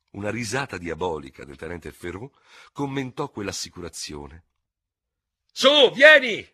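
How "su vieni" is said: shrill yell, very loud and very high. A lieutenant urges the pleading other lieutenant to follow him, shouting, stamping feet. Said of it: "urlò pestando i piedi".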